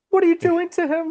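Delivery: put-on, fretful, worried, very high-pitched delivery. Retelling a character's question from an episode: imitating someone worried. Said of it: "She's, like, worried".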